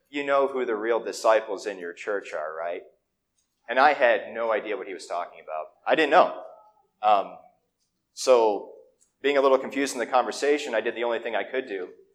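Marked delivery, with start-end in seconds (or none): 0.1-2.8 mock confiding, conspiratorial, leaning-in tone. Retelling a church leadership guru leaning forward to ask: imitating a conspiratorial tone. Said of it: "sort of in a conspiratorial way says".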